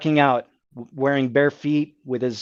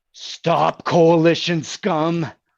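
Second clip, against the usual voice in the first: big, large voice, ringing and echoing; 3 semitones higher than usual. The game master voices a voice heard echoing through the ground: large booming voice. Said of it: "you hear a large booming voice that echoes".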